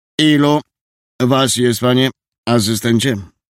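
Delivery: firm, commanding tone allowing no argument. The sergeant turns to assistant Antoniusz, in a tone brooking no objection. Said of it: "tonem nieznoszącym sprzeciwu".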